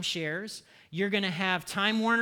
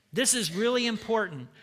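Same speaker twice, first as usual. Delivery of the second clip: plain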